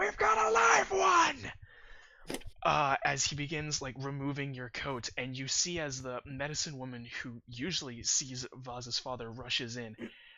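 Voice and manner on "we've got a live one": shrill, booming, very high, very loud, room-filling scream. A gnome at the kitchen table looks up and screams across the room, screaming and booming. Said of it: "He looks up and screams, and it booms out through the room".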